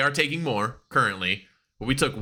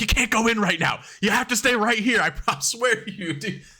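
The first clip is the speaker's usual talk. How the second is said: high-pitched, shrill screaming; 9 semitones higher than usual. Retelling a match where a wrestler held back referees: imitating Ethan Page screaming. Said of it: "screaming at him".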